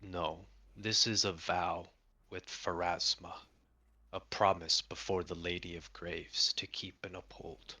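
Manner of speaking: grave, deep, solemn tone. The Samsarin stands up and explains, in a deep, solemn voice. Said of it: "in a deep, solemn voice explains".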